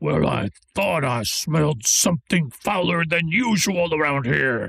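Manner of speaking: rough, garbled, broken ogre-like monster voice. Voicing a creature heard from the shadows: rough garbled humanoid voice. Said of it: "It's sort of a broken common".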